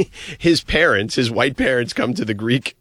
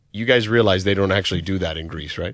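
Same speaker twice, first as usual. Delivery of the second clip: mock deadpan delivery, lower; 4 semitones lower than usual. Recounting what someone said in an ESPN commercial, retelling a deadpan line. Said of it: "It was very deadpan".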